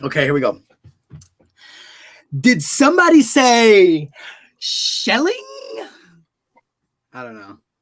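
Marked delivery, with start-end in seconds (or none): 2.4-5.3 slow, unhurried delivery, word say drawn out. Taking a turn at the bit with others, impression of Jeremy. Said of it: "I can make good impressions of Jeremy".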